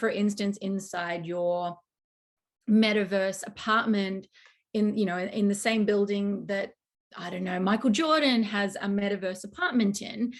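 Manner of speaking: ordinary talk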